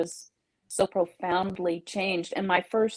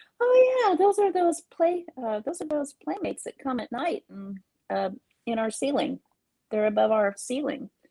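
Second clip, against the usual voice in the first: put-on matter-of-fact little wee child voice, pitched up; 6 semitones higher than usual. Quoting the speaker's grandson in the car during a Halloween sighting, imitating Gavin's little wee voice. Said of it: "said in his little wee voice".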